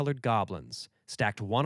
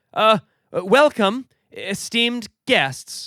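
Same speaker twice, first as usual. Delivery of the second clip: stuttering, very high pitch and very loud; 10 semitones higher, 10 dB louder than usual. Narrator reads an elf translating for a booming voice to the guests, stammering. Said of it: "Kenthiel stammered".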